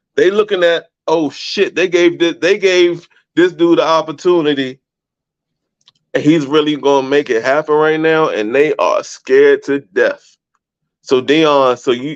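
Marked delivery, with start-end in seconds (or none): none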